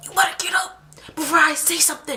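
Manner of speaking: hushed yelling under the breath. Retelling telling a man grabbing their arm to get up: retelling a quiet yell. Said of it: "I was quiet yelling".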